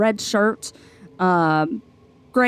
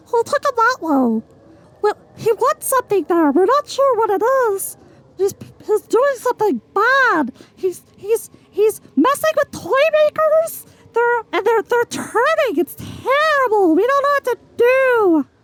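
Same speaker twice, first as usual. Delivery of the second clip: put-on fearful old gnome voice, much higher pitch; 14 semitones higher than usual. Game master voicing a gnome answering the adventurers, fearful older gnome. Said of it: "It's an older gnome, / a gnome peeking out from the side of one of these buildings. It's green pants, red shirt, gray hair. It's an older gnome, and watching you. Also fearful, / He jumps as he realiz".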